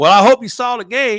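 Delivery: loud, high-pitched Southern drawl. Retelling a coach's laughing phone call after the game: deep Southern drawl. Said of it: "he had that real deep Southern drawl".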